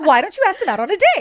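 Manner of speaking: high, chatbot-style AI assistant voice. Pitching a dating app idea, the speaker demonstrates its assistant in an ai voice. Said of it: "This is my AI voice".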